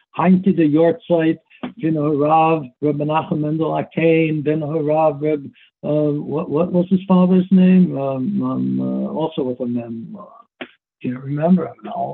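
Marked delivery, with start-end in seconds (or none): none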